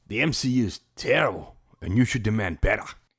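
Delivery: put-on Australian accent. Reading an article title aloud when asked: australian accent. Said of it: "say it like you're Australian".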